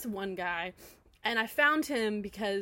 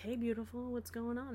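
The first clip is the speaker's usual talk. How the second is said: flirty voice, quieter; 8 dB quieter than usual. Retelling a video where a guy greets the viewer, imitating a flirty guy's voice. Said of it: "it sounds better than what I just did".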